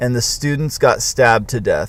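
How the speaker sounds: plain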